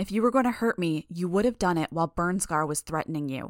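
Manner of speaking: ordinary delivery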